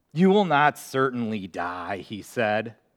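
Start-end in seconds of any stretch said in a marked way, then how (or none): 0.1-1.9 acted sarcastic delivery. Quoting the serpent's words to Eve, mock-sarcastic. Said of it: "perhaps with a sarcastic tone".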